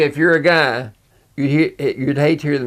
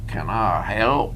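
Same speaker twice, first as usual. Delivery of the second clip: strong, heavy Southern drawl; 5 semitones lower, 6 dB quieter than usual. Retelling a car rental agent at the Nashville airport, in a heavy Southern drawl. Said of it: "In a heavy southern drawl".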